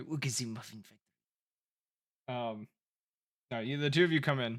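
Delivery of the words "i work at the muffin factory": quick, strange cartoonish voice. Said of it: "You remember the ... guy?".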